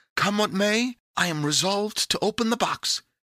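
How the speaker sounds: exclaiming. Pandora tells Epimetheus what she has decided, exclaiming. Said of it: "exclaimed Pandora".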